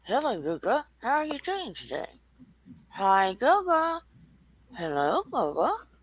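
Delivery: puppet voice thrown ventriloquist-style. A ventriloquist demonstrates for the host without his puppets: ventriloquist puppet voice. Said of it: "I would do the voices of the puppets and not move my mouth".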